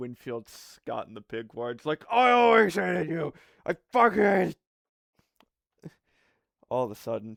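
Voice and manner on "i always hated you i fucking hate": very high, very loud, shrill screaming yell. Answering an annoying caller on the phone for a joke: mock yelling. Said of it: "just gonna start yelling at him".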